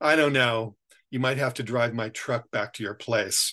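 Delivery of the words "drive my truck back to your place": plain reading voice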